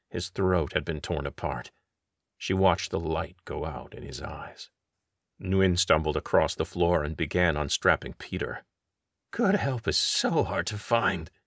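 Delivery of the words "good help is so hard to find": gasping out the words, short of breath. Narrator reads Nguyen's line as he unstraps Peter by Bruin's corpse; gasped. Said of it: "he gasped".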